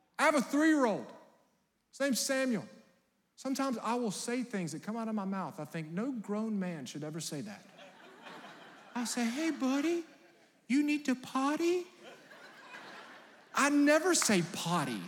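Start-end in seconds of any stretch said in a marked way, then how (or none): 9.2-11.8 put-on baby talk, much slower. A father retells how he talks to his three-year-old son, in baby talk. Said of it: "I'll start talking this baby talk".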